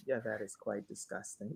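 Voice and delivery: hushed, calm, very soft voice. Teasing a co-host by repeating a reply, imitating a calm reply. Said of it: "You said it very calm".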